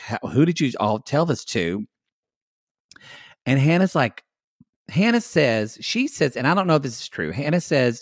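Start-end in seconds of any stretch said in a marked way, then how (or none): none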